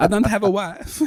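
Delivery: very high-pitched, loud, shrill put-on Eastern European accent. Speaker says actors all did Borat accents, then performs a Borat accent. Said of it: "They all did Borat accents".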